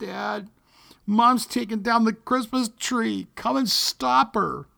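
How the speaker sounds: small crackly croaking voice. Retelling a child's phone call asking Dad for help: Chucky's little crackly croaking voice. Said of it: "a little crackly voice croaked".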